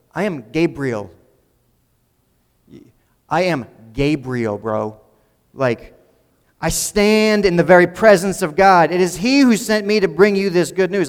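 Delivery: put-on tough-guy New Jersey accent and attitude. Reading the angel's second words to him in the next verse, Gabriel with New Jersey attitude. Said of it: "hear this in like New Jersey attitude".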